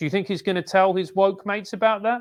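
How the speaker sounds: normal talking voice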